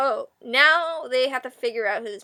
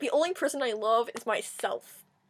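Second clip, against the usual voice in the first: mock sarcasm laid on thick; 6 dB quieter than usual. Retelling a movie character's line, imitating a sarcastic delivery.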